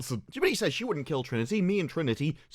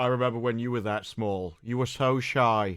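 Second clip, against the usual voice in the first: low, flat deadpan monotone, every word level; 5 semitones lower than usual. A line from the speaker's own series, in deadpan delivery. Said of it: "the deadpan delivery of every line".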